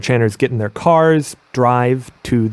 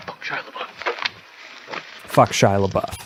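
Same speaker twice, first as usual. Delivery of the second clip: soft, hushed, breathy whisper; 4 semitones lower, 8 dB quieter than usual. Retelling what someone walking up to the webcam said: imitating a whisper. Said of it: "just whispers".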